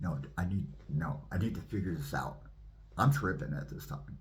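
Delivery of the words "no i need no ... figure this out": ordinary talk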